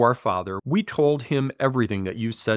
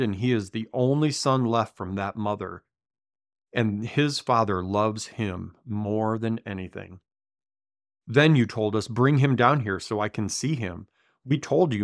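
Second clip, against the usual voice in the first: ordinary talk, nothing marked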